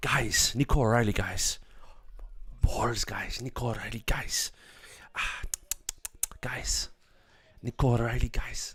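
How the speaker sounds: breathy, hushed delivery, "guys" repeated and leaned on. Watching a football match, doing a Guardiola impression. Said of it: "that's my Guardiola impression".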